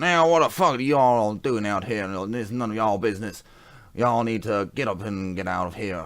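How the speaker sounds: put-on loud, cranky, grouchy old man voice, barely intelligible. Voicing a character interrupting a ritual: old grouchy voice. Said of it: "An old grouchy voice where you can hardly understand".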